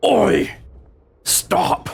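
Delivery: gruff, raspy, high-pitched rough guard voice. Narrating a scene, a Crimson Guard calls out: gruff voice. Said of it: "you hear in a gruff voice".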